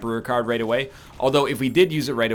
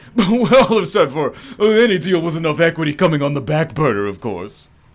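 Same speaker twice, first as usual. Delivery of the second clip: put-on loud, pitched-up wealthy fifty-year-old gent voice; 5 semitones higher, 6 dB louder than usual. Continuing the bit in a put-on rich fifty-year-old man voice. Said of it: "rich fifty-year-old man voice".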